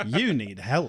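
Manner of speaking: put-on sarcastic tone. Reading out a quote of the day, imitating Spike's sarcasm. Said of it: "floods the western seaboard with sarcasm".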